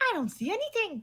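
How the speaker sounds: put-on very high-pitched little kid's voice. Voicing a Kenku that speaks in another borrowed voice: child's voice. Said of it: "a children's voice".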